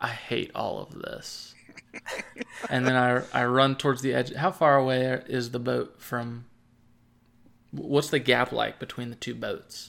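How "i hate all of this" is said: muttered under breath, much quieter, lower pitch. A game character, as others shout that the ship is sinking: muttered under breath. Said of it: "I say under my breath".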